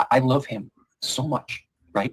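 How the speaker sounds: slow, emotional, holding back emotion. Telling another speaker how much a son loves them: getting emotional. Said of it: "I don't wanna get emotional".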